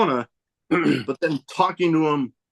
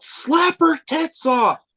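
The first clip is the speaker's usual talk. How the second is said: mock piercing shout, very high, yelled out. Retelling a shout from the crowd during a match: retelling a yell. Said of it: "I just yelled out".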